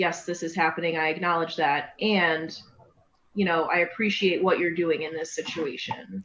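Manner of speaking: ordinary talk, nothing marked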